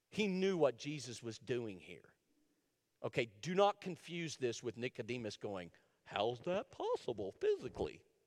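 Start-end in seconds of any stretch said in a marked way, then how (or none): 6.1-8.0 goofy dog voice, swooping pitch. Speaker acts out the question Nicodemus asks, in a dog-like voice. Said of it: "I feel like I just impersonated my dog".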